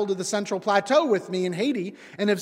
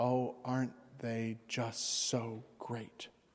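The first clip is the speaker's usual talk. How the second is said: hushed, low, slow, drawn-out reverent admiration; 9 semitones lower, 14 dB quieter than usual. A speaker showing how Jesus's lines get voiced in readings, mock-reverent Jesus voice. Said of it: "eyes to heaven way of talking".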